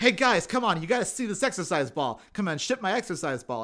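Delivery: obnoxious, in-your-face, pushy salesman voice. Recapping a show, retelling a character distracting people at the dock, in a put-on obnoxious salesman voice. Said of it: "in character as the obnoxious like guy who sells exercise equipment".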